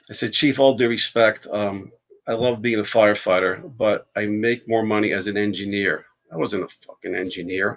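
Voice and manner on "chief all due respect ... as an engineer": usual speaking voice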